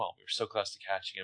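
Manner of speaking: soft, fast, under the breath. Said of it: "And Hannah's just like".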